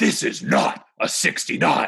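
rough, creaky, gruff voice. Doing a bit for the others about Worf answering someone's proposal, Worf impression. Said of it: "Here's my impression of Worf".

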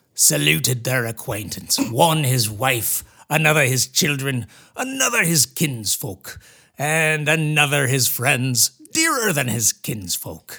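put-on old-fashioned, piratey voice. Reading a historical quote aloud in a character voice: Hakluyt voice. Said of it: "Here's my Hakluyt voice".

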